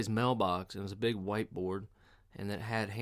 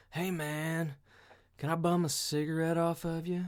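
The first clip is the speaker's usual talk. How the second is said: put-on stoned man voice, higher; 7 semitones higher than usual. Retelling what a stoned truck driver said: imitating a stoned man. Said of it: "Just fucking baked out of his mind".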